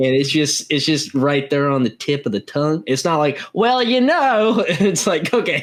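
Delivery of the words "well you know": put-on very high-pitched, thickly overdone country accent. Speaker, describing the grandparents' slight hint of country, demonstrates an exaggerated country accent. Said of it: "you don't need to exaggerate it".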